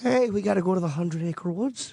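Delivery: slight Canadian accent, almost Irish. Reading a test line after being asked for a little Canadian accent: light Canadian accent. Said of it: "Sounds Irish".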